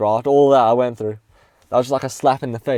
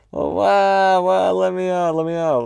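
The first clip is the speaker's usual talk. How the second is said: mock tearful, high, desperate crying voice; 6 semitones higher than usual. Recalling being seven while a man punched the wall, retelling crying as a child. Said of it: "I just started crying".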